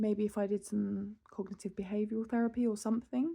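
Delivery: ordinary talk, nothing marked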